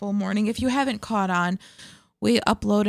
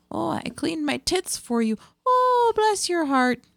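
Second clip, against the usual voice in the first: pitched-up put-on Midwestern accent; 8 semitones higher than usual. Pitching a comedy skit, voicing a midwestern swinger in a midwestern accent. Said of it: "but they're very Midwestern".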